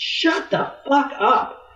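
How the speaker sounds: very high half-shouted, toned-down yell. Retelling how a tough player yelled over a man barking at players, imitating someone yelling. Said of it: "she just yelled over him and said".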